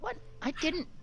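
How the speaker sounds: very high, embarrassed, flustered sputter. Voicing a character teased about a crush: flustered character voice. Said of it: "just kind of red in the face".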